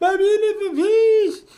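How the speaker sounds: very high-pitched, very loud, shrill toothless screech. Describing a man whose face was cut off, imitating his toothless scream. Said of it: "that's kind of exactly what he sounded like".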